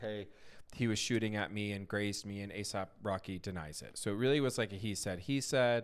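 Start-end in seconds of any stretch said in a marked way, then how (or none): none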